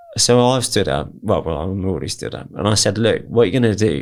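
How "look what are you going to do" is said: put-on loud speech, higher. Retelling confronting an armed man in a packed restaurant: imitating speaking loudly. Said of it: "speaking loudly so everyone in the restaurant can hear me".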